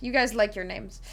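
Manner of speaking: ordinary talk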